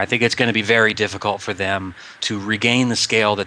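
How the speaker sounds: ordinary delivery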